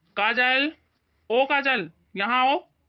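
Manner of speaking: very slow calling out, every word stretched. A son, after telling his mother enough is enough, calls someone over, shouting. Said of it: "क्यों चिल्ला रहे हो?".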